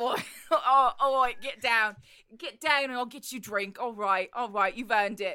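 put-on Cockney accent. Voicing the character Mickey Ollie after a player's headstand, Cockney accent as Mickey Ollie.

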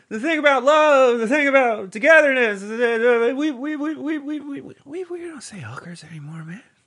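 put-on elderly politician voice. Joking with a co-host about sex workers: Joe Biden impression. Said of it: "Do you like my Biden impression?".

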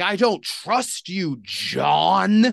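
very slow shout, last word stretched out. Retelling a family member yelling at a man: imitating someone yelling. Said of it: "yelling at this guy".

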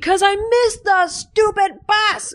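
very high, shrill, overblown angry outburst, acted out. Retelling Charlie Brown snapping back at the teacher: imitating an angry outburst. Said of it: "an overreaction".

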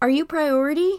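loud, high-pitched yell. Retelling how a man in charge called out to the line: imitating a man yelling. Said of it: "a man in charge of something yells out".

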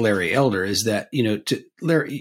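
ordinary talk, nothing marked

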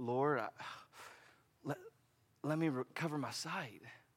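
put-on whisper with stammer. Retelling the Gospel scene, the speaker voices Bartimaeus's request in a stammering whisper. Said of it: "I bet it's a stammering whisper".

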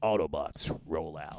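awful, very low, badly done robot voice. Answering talk of marrying Optimus Prime: awful Optimus Prime impression. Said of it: "That's an awful impression".

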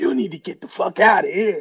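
hoarse, raspy, throaty voice. Imagining what Doc would tell the players: imitating Doc's hoarse voice. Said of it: "Doc with that hoarse voice gonna be like".

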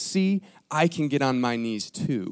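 put-on condescending whisper. Storyteller acting out a king kneeling beside a priest: retelling a condescending whisper. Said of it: "in a very condescending whisper".

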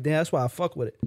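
ordinary talk

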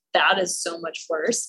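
ordinary talk, nothing marked

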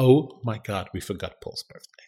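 hushed, hissed stage whisper. Retelling overhearing mom speak to dad and sister: imitating someone half-whispering. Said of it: "I can hear her whispering to my dad and my sister".

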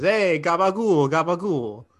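put-on greasy Italian-accented voice. Speaker imitates the guy who runs the company, stereotypical Italian guy voice. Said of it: "a greasy Italian guy who says".

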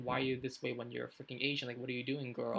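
plain

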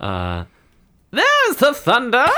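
very high, delighted, gleeful squealing shriek. A woman reacts when thunder comes out of your mouth: gleeful shriek. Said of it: "she shrieks gleefully".

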